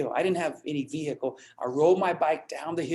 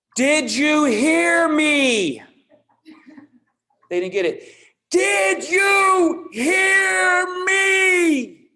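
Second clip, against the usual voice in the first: very loud, very high, slow, dragged-out shrill speech; 12 semitones higher, 8 dB louder than usual. Describing people talking to someone who doesn't understand them, imitating slow, loud talking. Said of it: "Slow and loud".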